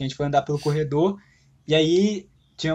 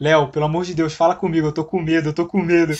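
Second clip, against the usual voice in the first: plain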